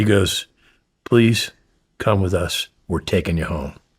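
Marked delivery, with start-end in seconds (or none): 1.0-3.7 pleading on the verge of tears. Retelling a nervous man asking him to come home, imitating someone almost in tears. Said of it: "he was almost in tears".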